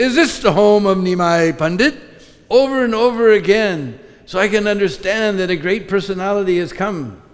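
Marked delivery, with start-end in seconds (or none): 0.0-1.9 put-on very loud, shouted call. Retelling how a visitor arrived at the house and asked, in a very loud voice. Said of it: "In a very loud voice".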